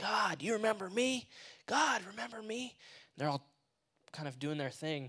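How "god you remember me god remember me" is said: put-on, high-pitched yelling. Retelling high schoolers calling out to god: imitating people yelling. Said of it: "start yelling".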